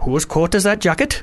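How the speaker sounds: convincing Welsh accent. Showing a friend how convincing their accent is, in a welsh accent. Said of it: "Check this out".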